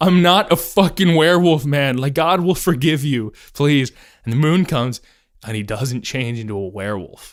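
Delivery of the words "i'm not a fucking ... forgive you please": put-on pleading tone. Retelling a novel's scene where a captive begs Conrad: imitating someone pleading. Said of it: "pleading with Conrad is like".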